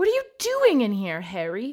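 furious, shrill, loud, swooping yell. Startled, she spins around and yells at the boy who came in. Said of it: "She yelled".

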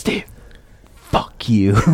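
whispered. Recalling a message heard while editing, retelling a whisper. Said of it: "he just started whispering".

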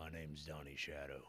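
very quiet, almost too soft to hear. Introducing oneself into a mic when asked, too quiet for the mic. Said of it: "Say it louder into the mic".

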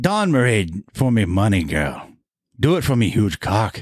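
put-on Jamaican accent drifting into Irish. Acting a scene, the speaker tries to pull off a Jamaican accent. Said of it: "I have to do a Jamaican accent".

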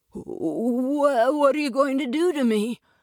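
stuttering, stammering words. In a story, a boy confronted by a giant asks his question, stuttering. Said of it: "Jack stuttered".

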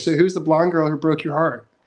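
mock flat-out, blunt, matter-of-fact delivery. Retelling what the chakra reader said: imitating a blunt question. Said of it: "And said it like that".

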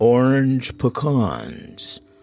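low, deep, mesmerizing hypnotist tone. Retelling a doctor's midnight phone call to a man: Dr. Lawson's deep hypnotic voice. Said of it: "in a deep hypnotic voice said".

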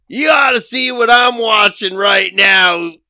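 rough, gruff, raspy worn-sounding voice. Retelling a phone call from Dave, imitating Dave's gruff voice. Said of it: "so his voice was very gruff".

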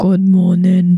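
put-on man's voice. Asked to say something in a man's voice, the speaker tries, putting on a man's voice. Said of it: "say something with man's voice".

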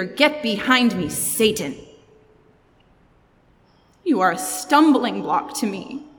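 acted, angry, snapped delivery. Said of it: "First the snap".

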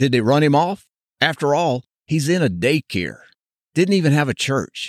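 heavy, exaggerated sarcastic tone. Recounting asking a pastor why he left his former church, retelling a sarcastic question. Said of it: "With my best sarcastic voice".

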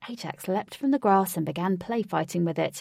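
ordinary delivery, nothing marked

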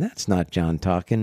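ordinary talk

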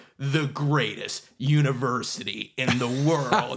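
slow, grand, drawn-out stadium announcer delivery. Retelling the scoreboard intro for a Michigan game: James Earl Jones deep booming voice. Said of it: "in his big, deep, booming voice".

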